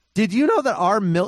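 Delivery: breaking voice, pitch jumping on mil. Asking the other speaker a question mid-conversation, voice cracking. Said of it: "my voice cracked there".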